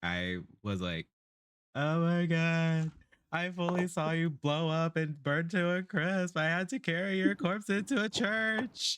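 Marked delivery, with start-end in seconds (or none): 1.7-9.0 high, tearful sobbing through the words. Playing a character who just unfroze, speaking to an ally: in-character sobbing. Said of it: "I'm fully sobbing".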